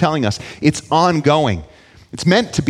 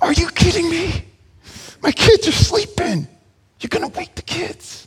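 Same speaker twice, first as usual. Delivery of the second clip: very high shouting whisper through gritted teeth; 14 semitones higher than usual. Acting out the man inside, woken at midnight, in a mock shouting whisper through gritted teeth. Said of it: "with gritted teeth and with a shouting whisper".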